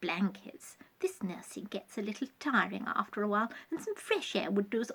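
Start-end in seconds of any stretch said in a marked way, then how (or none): none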